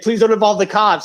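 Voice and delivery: mock high, frantic, scrambling, panicked voice. Retelling a buyer's plea after learning of fake bills: imitating someone panicking. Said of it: "now he's, like, panicking, scrambling".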